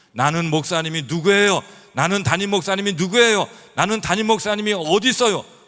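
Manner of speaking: shrill, very high-pitched, very loud shouting. A pastor retelling their wife yelling, wanting prayer from them, retelling a shout. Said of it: "막 소리를 지르는 거예요".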